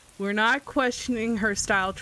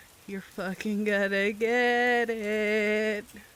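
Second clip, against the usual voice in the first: menacing laugh through the words, drawn out. Retelling your own words as you stared at him: laughing while speaking. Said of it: "I'm just laughing like as I stare at him".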